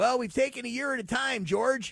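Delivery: raspy coach voice, pitched a touch high. Workshopping an impression live on air after being told to go raspy: raspy McVay impression. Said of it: "Just go raspy".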